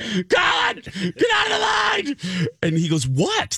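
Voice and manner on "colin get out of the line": very high, slow shriek, line stretched out. Retelling texting her husband Colin to leave the line, retelling screaming at Colin. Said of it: "I'm screaming".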